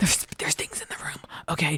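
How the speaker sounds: soft, wide-eyed whisper.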